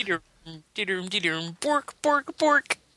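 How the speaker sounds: put-on mock-Swedish gibberish voice. Comparing a game's fake language to the Swedish Chef: Swedish Chef voice. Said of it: "it reminds me of the Swedish Chef".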